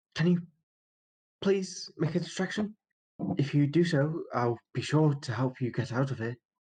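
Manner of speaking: high-pitched theatrical whisper. Asking the lizard man, in character, to make a distraction: half-whispering in character. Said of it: "I whisper to the lizard man?".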